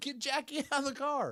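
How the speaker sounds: acted, slow, very high, drawn-out yell. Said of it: "I yelled".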